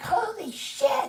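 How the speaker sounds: put-on very high, squeaky, thrilled, excited little-girl voice. Retelling what a little girl said, imitating an excited little girl. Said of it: "But a little girl was saying it".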